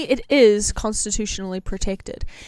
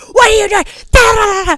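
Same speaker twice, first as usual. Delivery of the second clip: shrill, high, loud, angry scolding yell; 11 semitones higher, 10 dB louder than usual. Retelling how a friend yelled at a stranger filming her: imitating a friend yelling. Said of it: "she turned around and yelled at".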